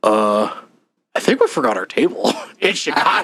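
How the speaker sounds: play-acted irritated, fed-up, pissed-off tone. Speaker retells what Dad said in a text, imitating dad pissed off. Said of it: "he's all pissed off".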